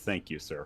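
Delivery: forced, through clenched teeth. Voicing a character's reaction to being refused help: through gritted teeth. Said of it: "through gritted teeth".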